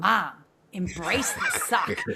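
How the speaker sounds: play-acted sassy tone with attitude. A mother recalls her daughter throwing her words back at her, imitating her attitude. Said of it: "she said it with such attitude".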